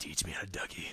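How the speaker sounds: hushed whisper, close into the microphone. Retelling taunting sniped players in TF2, whispering into the microphone. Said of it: "I would whisper into the microphone".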